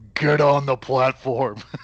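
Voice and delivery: loud shouting character voice. A role-play player yells an order at others in character, yelling in Groggle voice. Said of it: "yell in my best Groggle voice".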